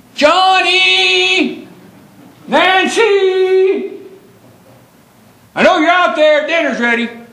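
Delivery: very high-pitched motherly voice calling out loudly. Telling the audience a childhood memory, the speaker imitates Mom calling the kids. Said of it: "you'd hear Mom's voice".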